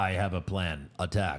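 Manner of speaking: low, slow, robotic voice. Recalling a superhero movie scene, quoting the hero's line in Iron Man robot voice. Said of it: "Iron Man still sounded like a robot".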